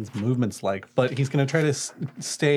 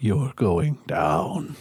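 muttered under the breath, slower pace; 4 semitones lower than usual. In a game, a character points at the dragon and mutters under his breath. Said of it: "under his breath is like".

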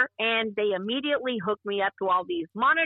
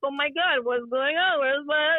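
tearful, sobbing, words through tears; 4 semitones higher than usual. Retelling standing in the bathtub bleeding and not knowing what to do, acting out her own crying. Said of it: "I'm just crying".

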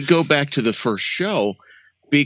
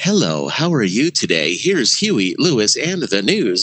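slow, artificial, robotic synthetic announcer voice; 4 semitones lower than usual. Mocking ai radio voices on air: imitating an artificial voice. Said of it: "an artificial voice sitting there going".

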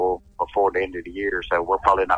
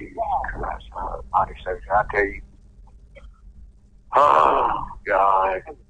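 dismayed tone, as if hearing bad news. Reacting to news of a possible release, sounding like getting bad news. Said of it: "You sound like a man getting bad news".

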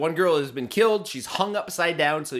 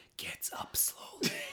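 barely audible, very quiet whisper. Retelling a stage direction the director says in the film: imitating a quiet whisper. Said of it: "you can hear the director very quietly say".

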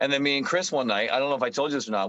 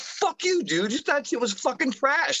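mock shrieking, very high-pitched screaming; 13 semitones higher than usual. Retelling screaming back during a staged fake argument: retelling own screamed reply. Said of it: "screaming at each other".

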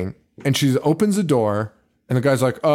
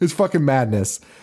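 ordinary talk, nothing marked

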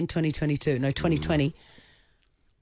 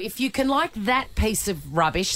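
plain

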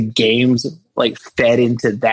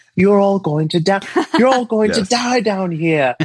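put-on prim, very posh British girl accent, pitched high; 8 semitones higher than usual. Retelling what a character says: imitating a posh British girl. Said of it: "very posh British girl".

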